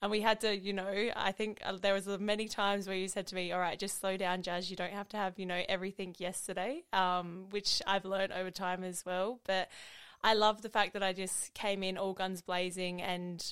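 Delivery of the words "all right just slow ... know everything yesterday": ordinary talk, nothing marked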